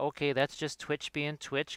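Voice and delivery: ordinary talk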